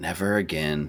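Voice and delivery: muttered quietly under breath. Voicing a character going back to the dishes: said under her breath. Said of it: "under her breath".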